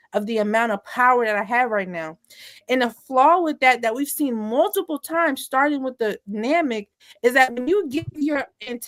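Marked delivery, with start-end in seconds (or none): none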